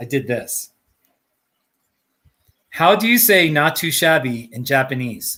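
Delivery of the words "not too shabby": plain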